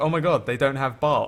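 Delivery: mock very upset, distressed tone. Retelling a favorite tv joke, acting out a man who's really upset. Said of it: "he's really upset".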